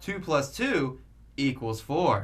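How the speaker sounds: slow, patronizing, condescending explainer tone. Imitating how watched video hosts explain things: mock-condescending explainer tone. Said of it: "they're gonna have a slight inflection, rather followed by a condescending tone".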